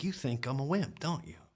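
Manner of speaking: mock angry, in-your-face. Retelling what a sergeant said when switching jobs came up: imitating someone getting real mad. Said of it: "gets real mad and he goes".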